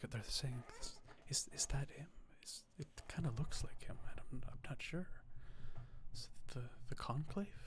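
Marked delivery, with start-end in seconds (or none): 1.3-7.5 barely audible, very quiet, hushed whisper. Voicing what onlookers are whispering as the host asks to hear them: quiet whisper. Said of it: "because you're whispering, plus you're very low".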